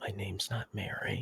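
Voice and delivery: soft, barely-there half-whisper in character voice. Voicing a girl in a tabletop game, speaking to Rathan: half-whispering in character. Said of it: "she just whispers to Rathan".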